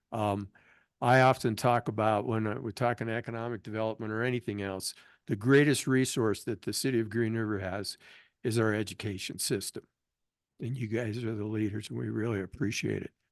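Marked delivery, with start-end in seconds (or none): 10.6-13.1 soft, emotional, choked-up voice catching. Speaker thanking the school board leaders before a council photo, choked up. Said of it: "I'm getting choked up".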